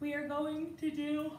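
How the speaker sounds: words stretched out while yawning. Leading an exercise on a mat after a sleepless night, yawning while speaking. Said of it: "I'm so sorry I'm yawning".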